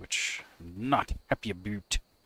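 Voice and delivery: put-on Canadian accent. Talking about facing knee surgery, slipping into a Canadian accent. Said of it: "Look at me sounding all Canadian".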